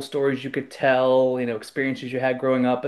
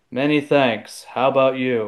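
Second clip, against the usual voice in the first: dead flat monotone reading with off cadence. Recounting a play, the speaker imitates an actor's reply to a co-star, monotone Harrison Ford delivery. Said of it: "the worst, most monotone".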